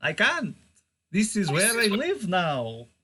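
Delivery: loud character voice with swooping pitch. Voicing a presence inside a player's body: number count voice. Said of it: "Why has he got the number count voice?".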